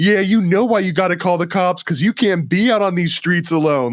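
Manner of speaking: put-on high, shrill screaming. Retelling how the lady across the street screamed: imitating someone screaming. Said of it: "and she's screaming".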